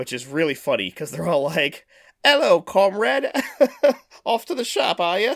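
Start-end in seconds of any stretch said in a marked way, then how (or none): 2.2-5.4 put-on very high, loud, thick British accent. Describing a TV show's characters talking to each other: thick British accent. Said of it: "the thickest British accent you've ever heard".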